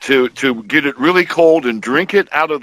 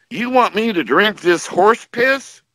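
put-on loud, pitched-up old farmer voice outburst; 7 semitones higher than usual. Retelling an old farmer's remark at a free sample table: imitating a loud farmer. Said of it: "really loud".

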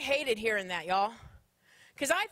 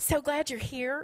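soft, hushed, fake saccharine sweetness. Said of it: "talks like this".

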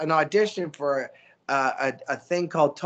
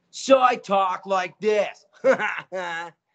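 precocious, snotty spoiled brat voice; 3 semitones higher than usual. Actor describing a cartoon audition, demonstrating the role: Trevor Troublemeyer bratty kid voice. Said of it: "Like a brat".

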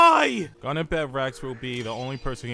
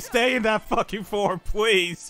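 earnest, desperate, high-pitched pleading; 7 semitones higher than usual. On stream, asking someone to keep her in that form, begging. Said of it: "I am begging you".

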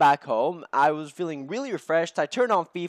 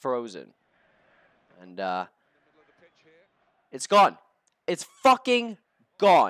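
furious, angry, swooping ranting outburst; 5 semitones lower than usual. A player tells viewers his Manchester United career mode froze, angry. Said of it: "I'm so fucking pissed off right now".

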